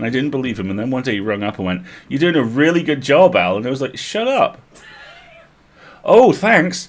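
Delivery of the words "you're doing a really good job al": dry, sarcastic-sounding tone. Recalling a first boss phoning with praise, the speaker imitates his sarcastic-sounding praise. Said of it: "everything I say sounds sarcastic".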